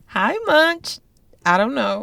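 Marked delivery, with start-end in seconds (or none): 0.2-1.0 weird, uncomfortable, awkward high-pitched delivery. Greeting the other speaker at the start: high-pitched awkward greeting. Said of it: "high pitch and just weird".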